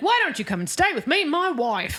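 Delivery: put-on British accent. Recapping a story and voicing a stranger met on the way: imitating a british accent. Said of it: "this guy with the British accent".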